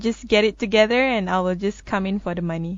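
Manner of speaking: ordinary talk, nothing marked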